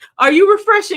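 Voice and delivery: high, loud, playful teasing tone.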